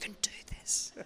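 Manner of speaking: hushed whisper under the breath. Recalling walking back to the dressing room after winning, retelling whispering to himself. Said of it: "And like whispering to myself".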